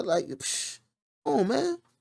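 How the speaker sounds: exasperated groan, high, cracking cry in disbelief.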